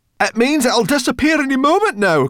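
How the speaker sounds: very high, loud, frantic crying out. A narrator reads a story character's line, crying out. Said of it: "cried Sorrel".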